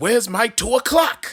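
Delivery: exasperated, frustrated, fed up, very high-pitched. Imagining Regis frustrated with his receptionist: imitating Regis Philbin frustrated. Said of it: "gets a little frustrated with his receptionist".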